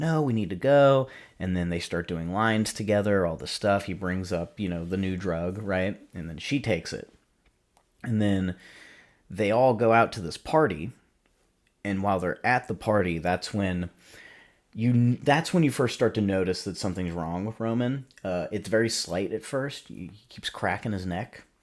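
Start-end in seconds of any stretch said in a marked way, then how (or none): 0.0-1.1 loud, high-pitched berating tone. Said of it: "starts, like, berating him".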